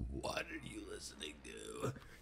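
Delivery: odd, breathy, hushed smoker's voice, almost whispered. Speaker retells Ian coming home during dishes, doing Ian's weird smoker's voice. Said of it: "In his like weird smoker's voice".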